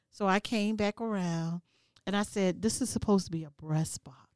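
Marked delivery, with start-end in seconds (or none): 2.6-4.1 mock even-tempered, polite, calm, low complaining tone. Retelling a KFC order mix-up and what she told the man: retelling a calm complaint. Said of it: "Did you say it calm like that?".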